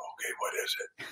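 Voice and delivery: hushed, very quiet, barely audible whisper. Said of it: "I'll whisper back".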